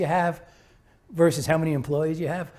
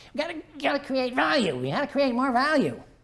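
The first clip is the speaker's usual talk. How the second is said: squeaky, high-pitched little man voice; 8 semitones higher, 4 dB quieter than usual. Recalling a former general manager at Tyco, in a squeaky voice. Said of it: "He had this squeaky voice".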